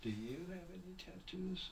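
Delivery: soft, high, seductive purring voice.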